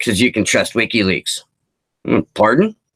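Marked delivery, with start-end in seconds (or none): 0.0-1.4 put-on mutter under the breath. Retelling what a customer said at the bar: imitating a customer muttering under her breath. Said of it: "under her breath, goes".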